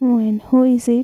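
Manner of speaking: ordinary talk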